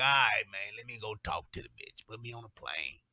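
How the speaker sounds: easygoing, offhand, casual matter-of-fact tone. Acting out Willie Johnson's reply to being called on for help: imitating Willie Johnson. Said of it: "Willie be like".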